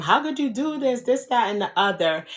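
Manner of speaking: high, tearful screaming and crying. Retelling confronting the boyfriend caught with the babysitter: imitating own yelling and crying. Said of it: "I'm yelling, screaming, crying at him".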